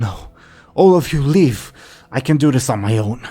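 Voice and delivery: loud voice filled with panic. Narrating a woman who turns and sees the slaughter; panicked voice. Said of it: "filled with panic, in her voice she says".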